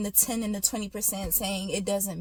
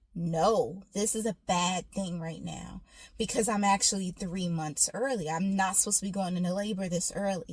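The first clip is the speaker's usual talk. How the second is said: ordinary delivery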